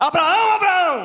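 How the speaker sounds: very loud, very high, booming calling out. Reading a bible passage, showing how the angel called out, shouting out. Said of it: "Se é brado é diferente".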